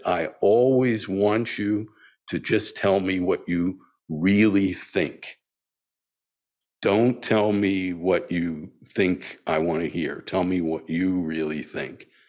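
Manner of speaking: plain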